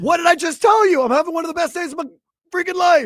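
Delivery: play-acted very high, angry, frustrated, aggressive voice. Describing people who answer a friendly question angrily, mock-aggressive reply. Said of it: "They're just aggressive".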